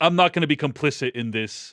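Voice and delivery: normal talking voice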